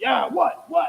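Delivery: high, aggressive, confrontational tone. Retelling a man raising his fist at a woman: imitating an aggressive challenge. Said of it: "acting all aggressive with her".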